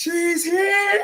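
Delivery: very high-pitched, different voice. Repeating a short line the way it sounds in Shivani's voice. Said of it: "I just hear it in Shivani's voice".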